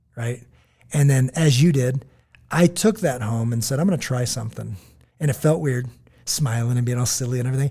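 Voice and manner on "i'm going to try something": normal talking voice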